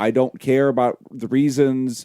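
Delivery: ordinary talk, nothing marked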